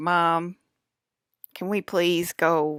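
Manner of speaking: put-on bored dog voice. Owner speaking for her dog to the viewers, voicing a bored dog. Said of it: "He's looking like a very bored dog".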